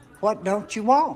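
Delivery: put-on Texas accent. A character repeating a question, in a texas accent. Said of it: "You hear that accent? That's Texas".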